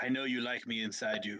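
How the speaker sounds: hushed, half-whispered acted reply. Answering the creature in character, half-whispering back. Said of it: "I whisper back".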